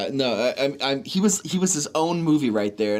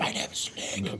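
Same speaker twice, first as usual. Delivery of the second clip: put-on raspy whisper, lower and quieter; 5 semitones lower, 9 dB quieter than usual. Imitating a movie character's first lines: Snake whisper. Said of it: "he whispers like a child".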